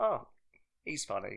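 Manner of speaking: plain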